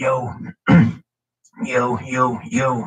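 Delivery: very slow, tight, constricted, squeezed-throat voice. Showing the voice used for a subharmonic bass technique: tight voice. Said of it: "tight voice".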